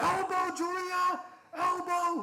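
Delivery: very high, loud frantic yell.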